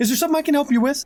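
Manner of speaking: lively, animated put-on voice. Acting out a voice after adding to the message, animated put-on voice. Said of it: "the voice gets animated again".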